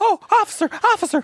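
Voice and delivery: put-on female voice. In a role-play, a witness calls out to the police, in [name]'s female voice. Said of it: "that's probably my best female voice".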